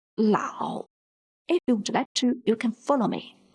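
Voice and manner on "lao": third tone on Lao, sinking low then climbing back. Mandarin lesson spelling out a character: dipping third tone on Lao. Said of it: "The pinyin of character Lao follows the third tone".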